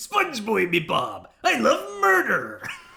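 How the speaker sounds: very loud, raspy, drawn-out cartoon crab voice. Joking while playing, switching to a Mr. Krabs voice. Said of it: "to Mister Krabs now".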